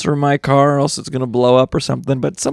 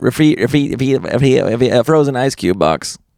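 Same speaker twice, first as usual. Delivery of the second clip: put-on stuttering cartoon pig voice. Showing the others how Porky Pig stammers on refrigerator. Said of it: "he tries to do, like, refrigerator, and I'm like".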